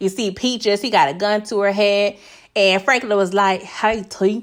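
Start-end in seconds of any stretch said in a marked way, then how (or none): 3.6-4.4 poorly done put-on West Coast accent. Retelling a TV scene where Franklin confronts someone: bad West Coast accent. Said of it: "another bad rendition of the West Coast accent".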